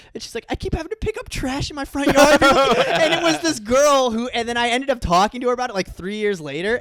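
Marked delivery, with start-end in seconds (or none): 0.5-2.4 put-on crying through the words, tearful, high-pitched, pleading. Retelling a girl who comes late into class: imitating someone crying. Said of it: "this girl comes into class and she's crying".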